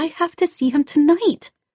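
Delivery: high-pitched yelling through tears. Reading a story, voicing the daughter yelling through her tears at her mother. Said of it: "Rebecca yelled through her tears".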